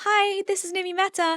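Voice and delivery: very high, squeaky, high-pitched voice. Recalling a voice the speaker hated hearing, old high-pitched voice. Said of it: "I used to have a really high pitched voice".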